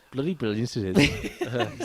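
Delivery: slow, put-on Welsh accent. Talking about travel, repeating a phrase in a put-on Welsh accent. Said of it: "I just did that in a Welsh accent".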